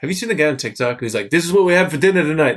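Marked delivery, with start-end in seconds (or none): 1.3-2.6 loud, high, terrible put-on Italian accent. Imitating an Italian guy from TikTok for a listener, in a horrible Italian accent. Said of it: "It's a horrible Italian accent".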